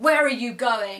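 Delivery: put-on loud, sharp, angry voice. Retelling what the manager asked on seeing the speaker leave: imitating an angry manager. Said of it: "in a kind of".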